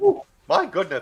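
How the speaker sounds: high, loud, swooping character voice. Describing one of his heroes and how he talked: Ed Wynn voice. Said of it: "the voice of Ed Wynn, you know, he talked like this".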